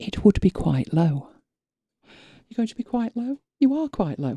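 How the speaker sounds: whispered voice. Speaker demonstrates audio levels for the viewers by whispering. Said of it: "I'm really whispering now".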